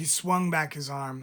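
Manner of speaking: ordinary delivery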